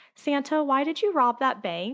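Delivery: put-on high, trembling, quivering little boy voice. Telling a story where a little boy calls out to Santa in church, imitating a quivering child's voice. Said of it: "in a quivering voice".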